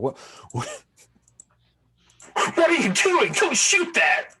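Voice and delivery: panicked shriek, loud and high.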